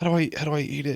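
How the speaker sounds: whispered delivery. Retelling a fishery ad where a man whispers to someone as he walks off. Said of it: "He like whispers that to someone".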